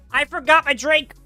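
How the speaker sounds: yelling close to the mic. Suddenly remembering a forgotten drink, the speaker yells close to the mic. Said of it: "I'm so sorry for yelling that close to the mic".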